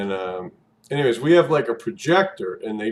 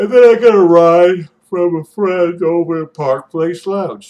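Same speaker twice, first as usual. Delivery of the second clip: loud, high words stretched by a yawn; 8 semitones higher, 11 dB louder than usual. Speaker recounts their evening, yawning while talking. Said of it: "Sorry for yawning".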